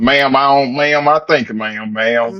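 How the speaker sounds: put-on country accent. Mocking a caller's way of speaking: imitating a country accent. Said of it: "his country accent was like".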